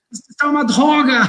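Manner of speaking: put-on heavy, laid-on French accent. Retelling a cook's outburst after tasting soup, Ratatouille chef French accent. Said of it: "Com aquele sotaque francês".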